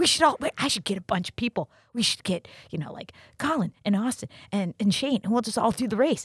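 excited, rushed, high-pitched, worked-up, eager chatter. Retelling a friend's idea for a race, imitating someone excited. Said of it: "all excited".

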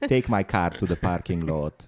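mock elderly Hungarian accent. Joking about a hungarian old age home, the speaker mimics grandparents: old hungarian accent. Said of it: "That's what my grandparents sounded".

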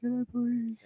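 mock tiny, very soft, very high, tearful pleading. Retelling asking a lady for a cigarette: retelling an almost tearful plea. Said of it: "I was almost in tears".

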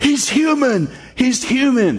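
very high, slow, stretched-out yelling. Retelling a boxing movie scene, imitating a manager yelling. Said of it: "this manager starts yelling".

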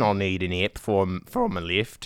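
put-on Australian accent. Joking with the others, slipping into a mock Australian accent. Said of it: "It's all Australian".

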